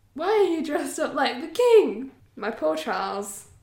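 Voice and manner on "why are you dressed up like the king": high, stunned, shocked disbelief. Reading a story aloud, the narrator voices Charles's line, shocked. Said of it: "in a shocked voice".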